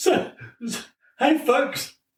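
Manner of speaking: talking through laughter. Trying to address the listeners while laughing too much. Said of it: "I'm laughing too much".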